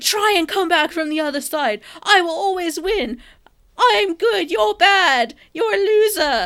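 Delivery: shrill, very high, very loud screaming. Recounting a man's speech to a dead woman, imitating him screaming. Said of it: "That was perfect rendition of his speech".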